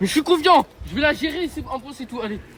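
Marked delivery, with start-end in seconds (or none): 0.0-0.7 very loud, high, forceful shouting. Asked again to say it louder, insisting he is confident: saying it even louder. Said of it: "Plus fort".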